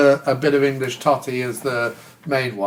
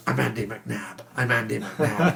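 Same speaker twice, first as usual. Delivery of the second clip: psyched-up, self-encouraging, repeated delivery; 3 semitones lower, 7 dB quieter than usual. Retelling a TV scene where Mike waits before a meeting: imitating Mike psyching himself up. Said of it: "he's trying to psych himself up".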